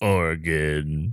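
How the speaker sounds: tough bodybuilder meathead voice on "Oregon". Asked to say Oregon in a muscle man voice, muscle man voice on Oregon. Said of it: "Can you only say it in your like muscle man, muscle beach voice?".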